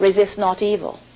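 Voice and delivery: ordinary talk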